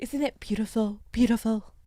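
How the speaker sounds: slow, soft, teasing, mocking, each word leaned on. Mocking a politician's favorite phrase: imitating Donald Trump. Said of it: "Aren't you gonna miss Trump's little stupid".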